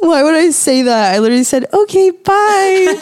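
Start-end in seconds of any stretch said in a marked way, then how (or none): 1.7-2.9 put-on tiny babyish voice, very high. Retelling ending a call with a customer: little baby voice. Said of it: "And like a little baby voice".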